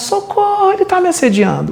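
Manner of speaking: very high, shrill woman's scream. Retelling how a woman reacted to a respectful man, imitating a woman screaming for help. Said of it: "ela começou a gritar".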